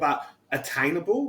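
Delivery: ordinary delivery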